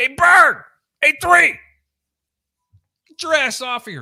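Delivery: very high, shrill, loud, top-of-lungs scream. Speaker retells the coach yelling at him: retelling a coach's scream. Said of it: "he's screaming at the top of his".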